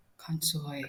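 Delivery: subdued, low, level, evened-out delivery. Recalling having to bring themselves down: low, level 'consoy'. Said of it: "Like I have to bring myself down".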